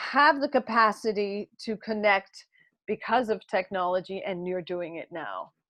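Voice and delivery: ordinary talk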